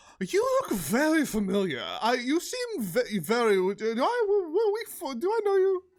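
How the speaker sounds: fake drunken speech. Player recounts last night's encounter with a drunk Sir Talava; drunk Sir Talava voice. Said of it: "a drunk Sir Talava was like".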